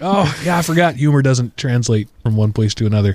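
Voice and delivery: ordinary talk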